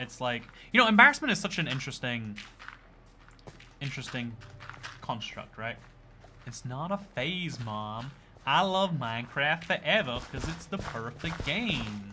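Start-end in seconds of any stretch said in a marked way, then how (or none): 6.5-12.1 slow, almost convincing put-on American accent. Trying out a line to test an American accent. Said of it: "that was almost an actually good American accent".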